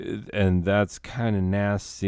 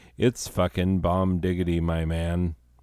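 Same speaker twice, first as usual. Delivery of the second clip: ordinary delivery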